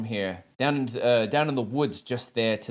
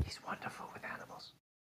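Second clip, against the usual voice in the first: very soft, hushed whisper. Voicing a character who whispers into another character's ear: whispering in character. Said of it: "You hear Nisbia whisper into Aaliyah's ear".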